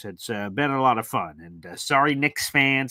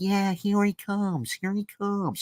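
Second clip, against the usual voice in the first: weird, drunken-sounding put-on accent, pitched up; 8 semitones higher, 3 dB quieter than usual. Introducing father as the next guest: Owen Wilson accent. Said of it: "mimicking some sort of an Owen Wilson accent".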